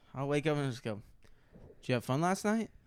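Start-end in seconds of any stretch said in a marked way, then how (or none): 1.9-2.7 imitated suggestive tone. Recounting what they say some mornings on waking up: imitating a suggestive tone. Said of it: "Just real, like suggestive".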